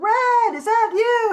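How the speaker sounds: high, loud, drawn-out hollering yell. Retelling how Granny called out from her porch: imitating Granny yelling. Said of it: "stand on her porch and yell".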